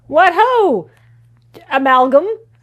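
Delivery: mild, easy, friendly calling voice. A player greets the thing that won't let the group inside, friendly yell upward. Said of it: "I'm just going to yell up at it".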